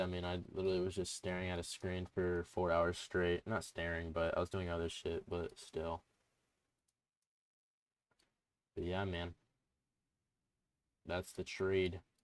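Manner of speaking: flat, lifeless, dead-sounding voice. After staring at a screen four hours straight, the speaker talks on, sounding dead. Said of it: "Sorry if I sound dead".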